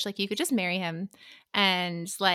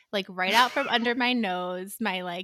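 ordinary delivery

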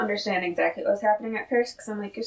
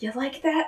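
mock hushed voice, higher pitch; 4 semitones higher than usual. Retelling a scene where a character waves his arms, imitating someone speaking quietly. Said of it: "really quietly".

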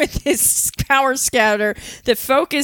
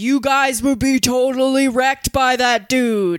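booming voice dropped low. Retelling a scene where Piccolo cuts into Goku and Krillin's talk; booming Piccolo voice. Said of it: "we hear the booming voice of reason".

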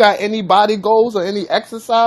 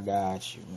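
put-on deep voice, much lower, much quieter; 14 semitones lower, 17 dB quieter than usual. Mid-conversation, the speaker answers in a put-on deep voice. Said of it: "he put his voice real deep".

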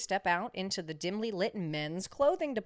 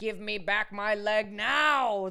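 bellowing, roaring, drawn-out delivery; 2 semitones higher, 5 dB louder than usual. Reading a story aloud, voicing the mannequin that has come to life: roaring. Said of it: "the dummy roars".

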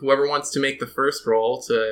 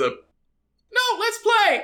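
put-on trembling voice, much higher, slower. Telling a story, the dealer answers a glaring man, imitating a shaking dealer. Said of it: "the dealer shakes some more and says".

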